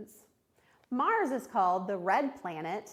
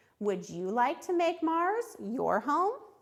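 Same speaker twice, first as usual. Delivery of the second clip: voice rises at the end, on "home". Teacher reads a passage aloud to show students rising question intonation. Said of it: "See how my voice went up".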